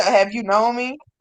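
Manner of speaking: ordinary talk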